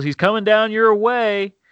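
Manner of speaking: acted, high called-out yell. Speaker retells his dad calling out to him during a deer drive, retelling dad's yell. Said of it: "And my dad yells".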